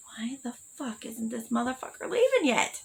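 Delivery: high, hushed whisper. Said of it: "And I was like".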